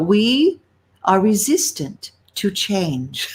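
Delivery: sugary, very sweet voice. Quoting a dear friend's favourite phrase: imitating a friend's sweetest voice. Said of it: "she had the sweetest voice and she'd go".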